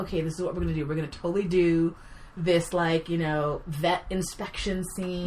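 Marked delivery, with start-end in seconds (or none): none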